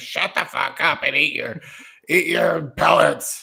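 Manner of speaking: harsh, rough hamster character voice. Voicing hamsters answering a complaining hamster, in a harsh hamster voice. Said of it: "It's a harsh hamster".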